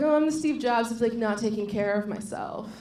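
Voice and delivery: ordinary talk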